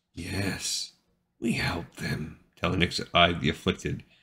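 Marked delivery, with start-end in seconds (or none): 0.2-2.4 very slow, quiet, hushed, drawn-out hiss. Reading a story aloud, the narrator gives a character's agreeable reply, hissing quietly. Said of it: "she hissed quietly".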